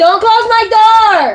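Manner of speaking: very loud, shrill, high-pitched yell. Speaker calls out not to close their door; yelling. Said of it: "Sorry for the yelling".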